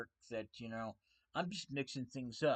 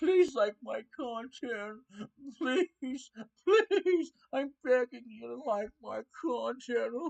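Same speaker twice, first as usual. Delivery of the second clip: shrill, very high, loud, pleading fake sobs; 12 semitones higher, 10 dB louder than usual. A creator sarcastically acts out begging viewers for likes, mock crying plea. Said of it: "I'm not gonna cry and say".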